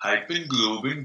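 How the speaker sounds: Icelandic-accented speech. Asked to do an Icelandic accent, saying the words in an Icelandic accent. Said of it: "So do an Icelandic accent".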